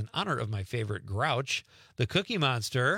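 ordinary talk

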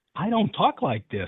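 ordinary talk, nothing marked

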